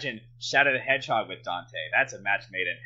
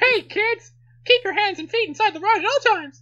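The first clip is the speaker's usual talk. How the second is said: bad, high-pitched squeaky voice; 9 dB louder than usual. Recalling a ride announcement from a trip to Disney World; Mickey Mouse impression. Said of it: "with that voice now".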